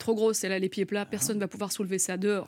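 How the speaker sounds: plain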